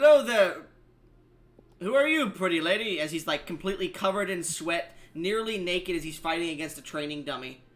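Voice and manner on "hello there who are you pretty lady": loud ship-captain voice. Voicing the captain greeting a player who enters his quarters: voicing captain Uruge. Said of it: "and he looks at you and he goes".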